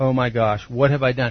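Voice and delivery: jolt of fear. Speaker retells what they said after looking down, retelling a jolt of fear. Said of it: "you get that jolt of fear".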